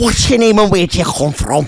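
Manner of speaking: put-on Scouse accent. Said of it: "I like more Shilla".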